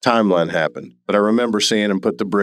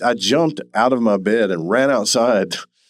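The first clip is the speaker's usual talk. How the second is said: ordinary delivery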